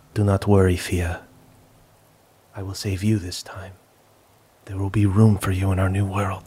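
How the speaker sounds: quiet, soft delivery. Game master voicing a character who won't meet the player's gaze, speaking quietly. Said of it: "but quietly says".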